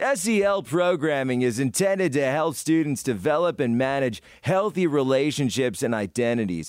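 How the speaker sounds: loud put-on news-anchor broadcaster reading voice. Reading a definition of SEL programming aloud, put-on broadcaster voice. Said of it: "Got to do this in broadcaster voice".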